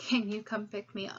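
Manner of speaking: normal talking voice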